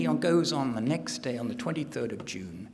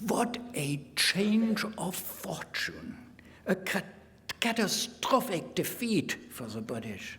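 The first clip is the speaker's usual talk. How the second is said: put-on German accent; 4 semitones higher than usual. Narrating history and reading out a quoted entry, in a mock German accent. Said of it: "I'm speaking with a mock German accent".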